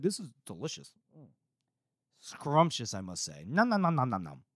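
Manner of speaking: offhand, airily dismissive, swooping sing-song tone. Retelling how a character reacts at a dinner: imitating Bias being dismissive. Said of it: "he's just so dismissive of everything".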